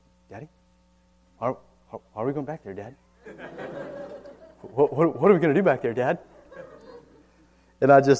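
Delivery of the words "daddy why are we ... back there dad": put-on bewildered, puzzled childlike voice, repeated questioning tone. Retelling what his boy asks while carried to the back bedroom: imitating puzzled questioning. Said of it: "with this puzzled look and he'll say".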